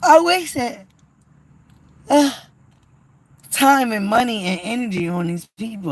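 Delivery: speaking through a yawn. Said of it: "as I'm still yawning".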